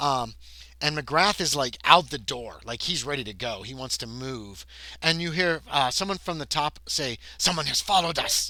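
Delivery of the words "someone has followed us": put-on very thick, laid-on Russian accent. Recounting a scene where a character calls down from above, in a thick russian accent. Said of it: "in a very thick Russian accent".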